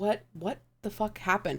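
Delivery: voice kept low. A player asks what happened while turning away from the others, lowered voice. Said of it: "And I'm like lowering my voice".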